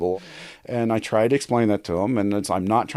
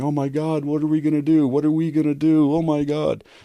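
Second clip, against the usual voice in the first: put-on tearful, sobbing, high, panicked crying; 5 semitones higher than usual. Retelling how a hairdresser reacted to news about her rock: imitating someone crying. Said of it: "she starts crying".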